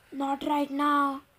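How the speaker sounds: hoarse, croaking voice. Reading a story, a boy answering his mom through the door: croaking. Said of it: "I croaked".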